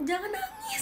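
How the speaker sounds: high, pleading voice.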